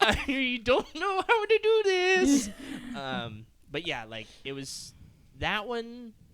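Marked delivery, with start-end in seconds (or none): 0.0-2.5 high, loud, slow, helpless laughing wail. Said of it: "So I was like".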